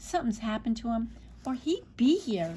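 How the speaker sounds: plain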